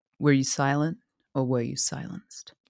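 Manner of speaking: deep, measured interviewer tone. Joking about handling an ex like an interviewer: Oprah voice. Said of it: "Do Oprah voice".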